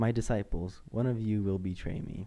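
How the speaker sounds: ordinary talk, nothing marked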